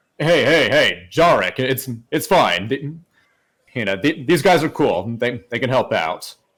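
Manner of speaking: easygoing, relaxed, calming, reassuring tone. Game narrator voices a freed prisoner calling from inside a tent to Jarek: Varo's deep voice. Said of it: "you kind of hear a deep voice saying".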